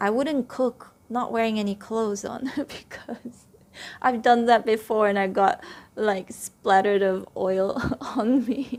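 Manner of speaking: speaking through bursts of laughter. Giving an example to listeners, laughing while talking. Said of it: "So sorry that I'm laughing".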